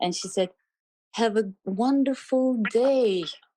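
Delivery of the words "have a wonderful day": acted pleasant, kindly old-lady voice, high and slow. Retelling a woman's goodbye after a drive, imitating a pleasant, kind voice. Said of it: "with very pleasant and kind voice".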